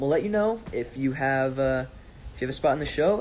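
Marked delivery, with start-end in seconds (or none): none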